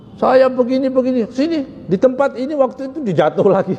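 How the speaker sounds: high-pitched, eager delivery. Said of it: "semangat dia cerita".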